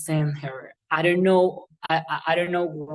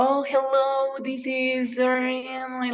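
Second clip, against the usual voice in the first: very slow, high, drawn-out put-on American accent; 7 semitones higher than usual. Showing how American native speakers talk: imitating an American accent. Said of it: "like, with that accent".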